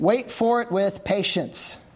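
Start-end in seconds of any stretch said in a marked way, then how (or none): 1.0-1.8 the word "patience" stressed. Reading a text aloud to listeners, stress on patience. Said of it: "Emphasis on patience".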